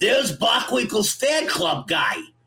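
loud, high shouting. Retelling how an acquaintance yelled down the hall: imitating Little Ricky yelling. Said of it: "he'd point and yell all the way down the hall".

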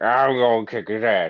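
loud, slurred, unclear, barely intelligible mumble. Mocking a hard-to-understand Batman line: mumbled Batman voice. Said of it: "you can barely understand f-, every fifth word that he says".

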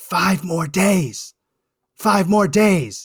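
very slow, furious whisper-shout. Retelling a heckled speech, imitating Joe Biden's whisper shout. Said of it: "he whisper shouted".

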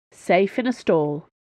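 ordinary delivery

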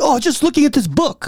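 put-on heavy Chinese accent. Quoting a woman who panicked when asked what she was doing, heavy Chinese accent. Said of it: "heavy Chinese accent".

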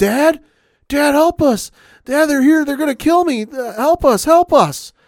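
put-on panicked kid voice, high, loud, desperate, screamed.

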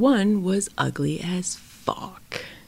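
slow, soft, unvoiced whisper.

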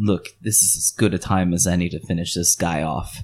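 muttered under the breath. Telling a story, relaying a message to Riley, muttered under the breath. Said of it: "under my breath I say".

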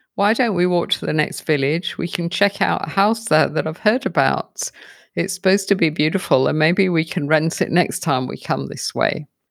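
normal talking voice

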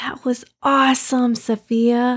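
whispered words. Reading a story; a girl pats her friend's back on the way to the stage: whispering.

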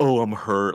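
put-on mock crying, fake weeping. Retelling how a fighter mocked his beaten opponent: imitating Adesanya fake crying. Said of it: "fake crying".

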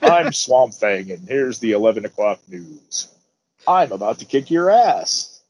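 low-pitched TV news anchor delivery. Joking that a character's entrance music sounds like the news, in a newscaster voice. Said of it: "it sounds like a fucking newscaster coming on".

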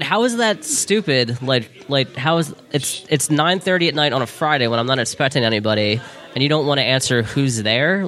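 ordinary talk

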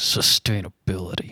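through clenched teeth. Voicing a character who grits his teeth before answering: through gritted teeth. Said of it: "grit his teeth and open his mouth".

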